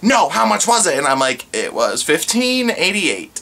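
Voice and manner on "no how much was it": put-on furious yelling, high, angry screaming. Recounting a woman whose card was declined, retelling her screaming. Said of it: "And she is just screaming".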